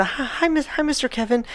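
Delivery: put-on high, sweet, polite child voice.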